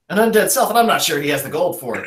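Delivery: fast, rattled-off hillbilly auctioneer voice. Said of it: "'cause he's a hillbilly who says it really fast, like an auctioneer".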